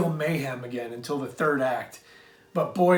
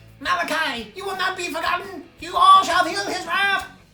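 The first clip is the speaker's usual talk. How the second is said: put-on very high, loud, menacing evil-child voice; 5 dB louder than usual. Host signing off with favorite evil kid impressions, doing an evil kid impression. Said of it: "my favorite evil kid impressions".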